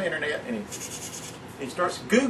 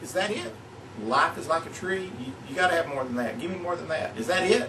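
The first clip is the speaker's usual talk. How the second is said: ordinary delivery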